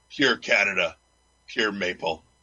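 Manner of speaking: deepest, sultriest, manliest commercial voice. Voicing the closing tagline of an imagined commercial, in a sexiest, manliest voice. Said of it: "in your sexiest, manliest voice".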